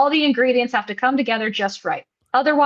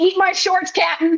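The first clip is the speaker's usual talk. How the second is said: put-on high, rowdy heckling scream; 7 semitones higher than usual. Retelling a fan in the audience nagging the announcer: imitating a scream. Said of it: "he just screams".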